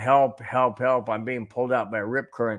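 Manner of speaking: ordinary delivery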